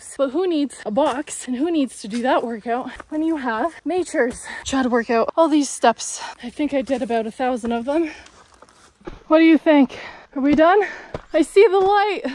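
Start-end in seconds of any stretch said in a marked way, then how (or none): 11.3-12.2 voice breaking mid-line, cracking and pitched up. After climbing about 1,000 steps, asking if they're done, voice cracking. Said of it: "My voice cracked".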